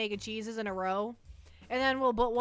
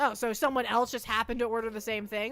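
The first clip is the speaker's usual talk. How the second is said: ordinary delivery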